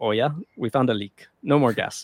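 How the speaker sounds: put-on Russian accent. Retelling how russia shut off the gas, in a put-on russian accent. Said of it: "that's my best Russian".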